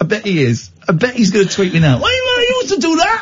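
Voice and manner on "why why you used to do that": put-on Newcastle Geordie accent, pitched very high. Imitating a listener from Newcastle tweeting in: put-on Newcastle accent. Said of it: "I'm doing my Newcastle, um, Newcastle accent".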